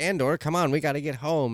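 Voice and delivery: cheeky, sassy voice. Retelling how B2 talked early in the series: imitating sassy B2. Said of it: "he was kinda sassy at the beginning".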